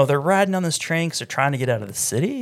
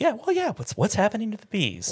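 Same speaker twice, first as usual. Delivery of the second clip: pitched up, each phrase end swooping upward; 8 semitones higher than usual. Imitating a teacher character asking about missing bees: Mark Wahlberg impression, upward cadence. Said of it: "in that weird, like, upwards cadence that he does".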